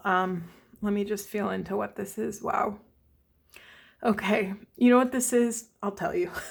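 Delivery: moved, emotional voice, searching aloud. Speaking to the masculines, getting emotional. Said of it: "I'm getting emotional".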